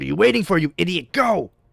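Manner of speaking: harsh, angry, barking tone. Voicing Cinder snapping at a hesitating companion: barking angrily at him. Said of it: "Cinder barks at him".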